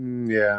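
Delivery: put-on flat, unexcited, unenthused tone. Retelling a sick, flat reply to a reporter: imitating own unexcited reply. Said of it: "uh, not excited".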